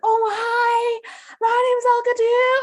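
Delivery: put-on over-the-top excitement, very high and loud. Retelling meeting a woman who shares her name, mock over-the-top excitement. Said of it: "like an American at Disney World excitement".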